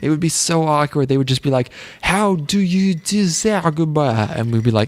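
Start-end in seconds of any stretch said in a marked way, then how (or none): 2.0-4.3 very slow, high, bad put-on Japanese accent. Speaker imitates japanese people speaking english to them, put-on japanese accent. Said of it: "Is that your Japanese impression?".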